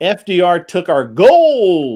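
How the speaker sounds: put-on very slow, swooping old prospector drawl, stretched gold. Reading out a super chat donation message: prospector voice. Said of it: "Gotta read it in that prospector voice".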